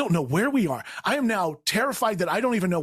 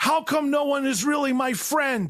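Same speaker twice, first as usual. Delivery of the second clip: put-on scream, higher pitch; 8 semitones higher than usual. Retelling a bad trip at home: imitating own past screaming. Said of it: "I just start screaming".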